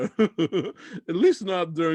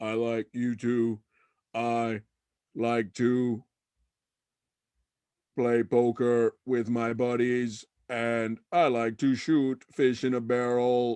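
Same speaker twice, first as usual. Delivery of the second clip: low, flat, monotone goofy robot voice; 4 semitones lower than usual. Narrating a story, the super cyborg answers someone who likes it, super cyborg character voice. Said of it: "No, it's [name]. He's a super cyborg. / Get ready for a hungover breakfast after we party, party, party, party, party, party, party till our fingers fall off. / Whoa, what's wrong with him?".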